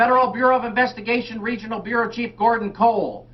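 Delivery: flat, very high, monotone bellowed yell. Trying out a voice, the speaker attempts a Gordon Cole impression. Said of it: "I wanted to do the David Lynch as Gordon Cole".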